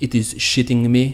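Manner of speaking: terrible, clumsy put-on French accent. Guessing how Batum described his elbow to reporters, as Batum with a French accent. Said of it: "He probably said it with more of a French accent".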